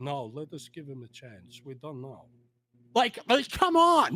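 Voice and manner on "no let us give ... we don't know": very quiet, very soft, low European voice. Retelling what a European team figure said about a rider: Roger DeCoster impression. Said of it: "this European guy going".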